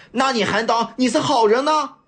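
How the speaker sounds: very high, scornful, sneering, with a cold laugh. Reading a story, a character answers another's excuse with a contemptuous sneering retort. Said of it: "一脸轻蔑地冷笑着反问".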